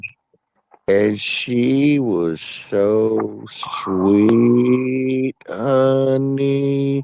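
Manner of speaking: deliberately slow, drawn-out speaking pace. Speaker demonstrates how a relative talks slow, slow talking. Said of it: "just like that".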